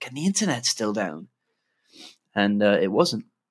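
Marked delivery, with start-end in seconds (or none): 0.1-1.3 downcast, let-down, dejected, disheartened tone. Retelling coming home after the internet had been down all day: imitating own disheartened voice. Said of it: "I came back very disheartened and was like".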